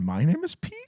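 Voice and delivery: TV evening-news anchor delivery. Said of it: "Did you hear me do it like Anchorman?".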